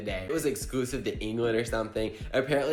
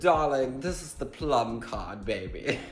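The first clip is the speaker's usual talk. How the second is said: fake, aristocratic, posh put-on British accent; 2 semitones higher than usual. Acting out what he said, in a put-on British accent. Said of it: "I give everyone a British accent because it sounds like it's so aristocratic".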